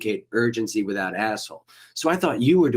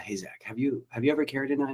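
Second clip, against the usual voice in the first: soft, sweet, kindly tone, play-acted; 4 semitones higher, 7 dB quieter than usual. Retelling what Matt asked Zach; imitating Matt's sweet tone. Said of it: "he said it so sweetly".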